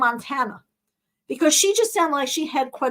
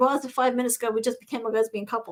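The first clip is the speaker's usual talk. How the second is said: ordinary talk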